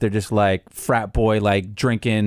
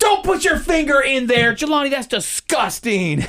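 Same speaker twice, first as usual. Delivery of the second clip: very high, sing-song, swooping, embarrassing yell. Acting out bursting into the kid's gaming room: mock yelling embarrassing things. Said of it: "yell embarrassing ass stuff".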